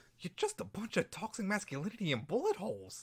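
bad, high sing-song voice swooping up. Trying out a horrible Harley Quinn impression of a one-line description. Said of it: "that horrible impression".

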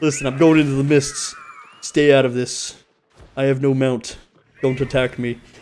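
put-on voice pitched way down. A gamer speaking to another player in the game, pitched-down voice. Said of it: "I don't know why I pitched it down".

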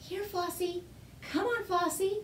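gentle, soft, quiet, hushed call. A boy calls his lamb out of a cave without waking a sleeping dragon, softly. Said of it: "the boy called softly".

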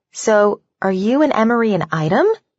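ordinary delivery

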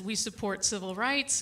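normal talking voice

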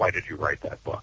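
through clenched teeth. Retelling what a wife asked as a discussion wrapped up, retelling through clenched teeth. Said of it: "with sort of clenched teeth".

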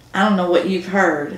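ordinary talk

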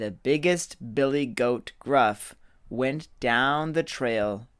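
plain reading voice

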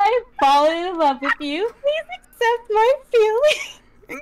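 very high, giggly, laughing through the words. Making a love confession that was asked for, laughing while talking. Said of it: "I hate that I can't say it with the straight".

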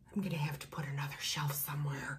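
fast, soft whispered aside.

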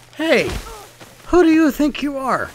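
high, loud indignant shouting.

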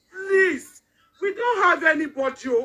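desperate begging tone. Appealing to the wife of the Lagos State Governor for help: desperate pleading. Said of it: "I'm pleading on the wife".

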